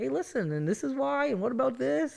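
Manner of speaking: high, gentle, unaggressive coaxing voice.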